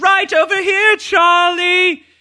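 very high, loud, slow, drawn-out motherly voice. Recapping a scene on a podcast where the mom answers Charlie, imitating Charlie's mom. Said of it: "Sorry about the voices".

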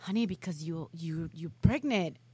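put-on whispered delivery. Retelling how a guy answered a girl's question, imitating a guy whispering. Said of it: "you could hear the guy whispering like".

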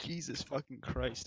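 breathy exclamation broken by laughter. Reacting to a friend's mishap: laughing while talking. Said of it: "I can't stop laughing".

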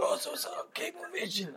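high-pitched, soft, raspy voice. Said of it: "he has that raspy voice".

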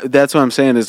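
usual speaking voice

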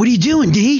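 very high-pitched yelling. Voicing a character who opens a window to a friend: yelling down from a window. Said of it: "he yells down to you".

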